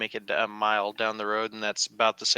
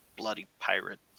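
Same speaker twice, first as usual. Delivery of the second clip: muttered under breath, much quieter; 7 dB quieter than usual. Narrating the scene, the speaker voices the master of the shop muttering under his breath. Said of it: "he mutters under his breath".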